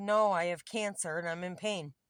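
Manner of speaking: normal talking voice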